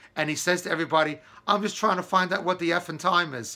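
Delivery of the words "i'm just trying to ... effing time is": put-on speaking with a British accent. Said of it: "in that British accent".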